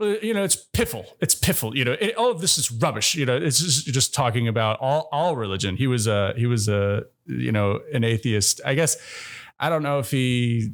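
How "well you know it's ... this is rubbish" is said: very high commanding voice, laid down with authority. Imitating Christopher Hitchens dismissing religion: Christopher Hitchens impression. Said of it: "he would be like".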